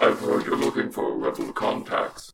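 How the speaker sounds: whispery, hushed, mechanically distorted voice. Narrator voices an unknown figure speaking through a board's holo projector, in a heavily machine-modified voice. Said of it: "a voice that's heavily modified by machines".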